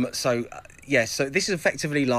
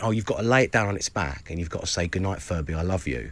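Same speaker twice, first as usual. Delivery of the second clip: mock-deadpan, much lower; 6 semitones lower than usual. Retelling how a woman answered her question about turning off a furby, imitating a deadpan reply. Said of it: "she just totally deadpan".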